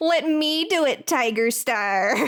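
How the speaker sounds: high, nerdy little voice. Describing how a book character sounds in their head: Darkstripe in shitty nerd voice. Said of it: "a shitty little nerd voice".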